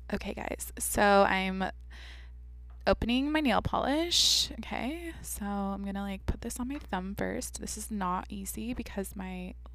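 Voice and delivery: crackly, creaky vocal fry throughout. Demonstrating how some people talk while painting nails, vocal fry. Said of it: "How they talk is like vocal fry".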